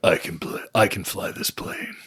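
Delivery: put-on gruff movie hero voice. Retelling a movie scene, answering if he can fly the plane: Clint Eastwood impression. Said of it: "And Clint in his best".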